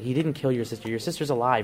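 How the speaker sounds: usual speaking voice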